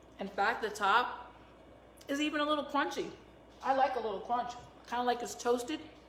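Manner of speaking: talking with mouth full of food. Tasting food while talking to the listener, talking with food in mouth. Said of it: "Sorry to talk to you with food in my mouth".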